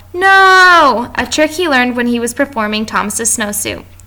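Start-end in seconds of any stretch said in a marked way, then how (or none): 0.1-1.1 high-pitched, loud yell. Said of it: "get kids to yell".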